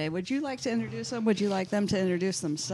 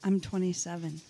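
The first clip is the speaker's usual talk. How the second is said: voice pitched much lower; 3 semitones lower than usual. Joking with the others about telling everyone you're 27: said lower. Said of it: "You just said it lower".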